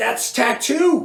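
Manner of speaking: high, slow sputter.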